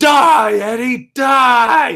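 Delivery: very high-pitched, shrill, loud, intense all-out yell. Retelling a wrestling match moment: imitating Brock Lesnar yelling. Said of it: "the first time he yells it".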